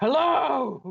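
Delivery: very high, drawn-out hello shouted downward. Retelling calling down to a voice they could hear: shouting down into something. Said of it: "and then shout down the thing".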